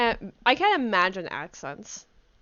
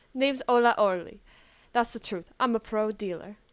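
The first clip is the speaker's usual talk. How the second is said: bad put-on Russian accent, slower. Speaker voices her character Olga, in a bad put-on Russian accent. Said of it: "I gotta like try to get my accent in".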